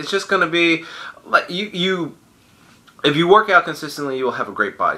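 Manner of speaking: slow, halting, stumbling, stuttering delivery. Giving fitness tips, the speaker is stuttering. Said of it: "I'm kind of stuttering".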